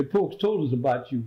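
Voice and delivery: ordinary talk, nothing marked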